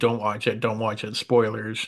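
ordinary talk

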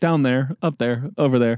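usual speaking voice

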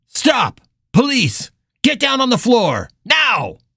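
high, loud, barked shouting. A police officer confronts a man with a knife: yelled orders. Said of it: "[name] leveled her gun at the man".

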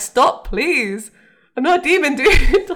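high, very loud, slow, drawn-out yelled shout. Retelling a scene where they chug salt down Sam: imitating Sam shouting. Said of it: "Sam's just shouting".

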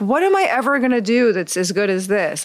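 plain

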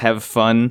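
deadpan, flat, emotionless monotone. Retelling a show moment, imitating Mayu's flat emotionless tone. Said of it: "you can tell there's no actual emotion or feeling behind it".

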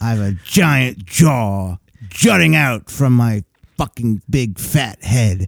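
slow voice talking around a huge jutting underbite. Mocking a ranting man in a video: imitating a big-underbite voice. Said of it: "You can hear it in his voice".

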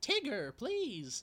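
very high, snooty, uppity voice. Describing a Disney Pooh promo, quoting Rabbit to Tigger: uppity Rabbit voice. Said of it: "the very uppity, like, ... sort of voice".

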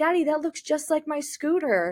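put-on high, excited childlike voice.

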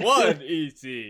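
loud, resonant vampire puppet voice. Speaker counting aloud in the Count from Sesame Street voice. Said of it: "I love it when you do that voice".

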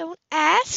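very high-pitched groan. Asked at the table how last night went, she groans. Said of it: "she groaned".

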